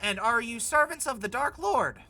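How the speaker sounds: tiny, very high, squeaky voice. Voicing someone at the stockyard questioning the adventurers, in a tiny voice. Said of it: "sort of a tiny voice go".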